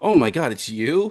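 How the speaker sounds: loud, high-pitched, starstruck fan gasp.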